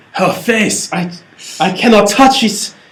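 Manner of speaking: terrible put-on French accent. Imagining a very french editor talking about a face: horrific put-on french accent. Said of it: "I apologize for my horrific accent".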